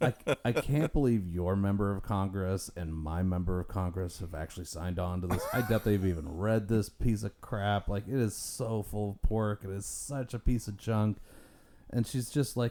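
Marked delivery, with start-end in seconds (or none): none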